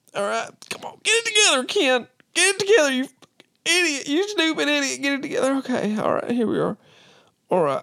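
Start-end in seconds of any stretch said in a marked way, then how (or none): 1.0-6.7 put-on high, teary voice, talking through tears. Speaker talking to themself, crying while talking. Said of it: "just the crying".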